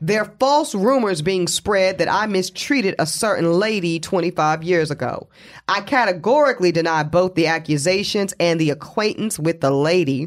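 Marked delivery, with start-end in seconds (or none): none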